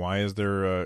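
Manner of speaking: usual speaking voice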